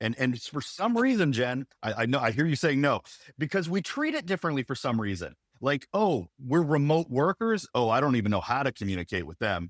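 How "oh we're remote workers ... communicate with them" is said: sarcastic, mocking tone with feigned cluelessness. Mocking how people treat remote workers, in a sarcastic mocking impression. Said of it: "You can tell the sarcasm in my voice".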